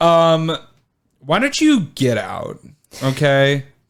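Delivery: slow, drawn-out, swooping sassy tone full of attitude. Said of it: "with an attitude".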